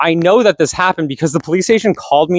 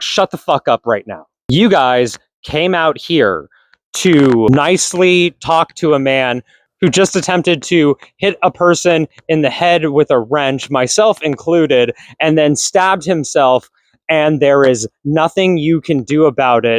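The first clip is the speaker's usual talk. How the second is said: ordinary delivery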